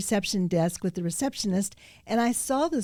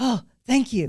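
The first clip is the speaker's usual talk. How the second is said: winded, puffing, breathless, huffing voice; 3 semitones higher, 4 dB louder than usual. Retelling a hurried man thanking at a restaurant door: imitating someone huffing and puffing. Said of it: "huffing and puffing".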